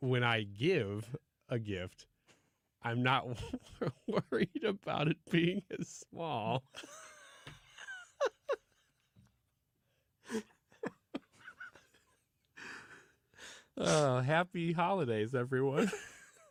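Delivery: choked up, swooping teary voice, near crying. Closing an answer about gifts by wishing everyone happy holidays: choked up. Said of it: "Are you crying?".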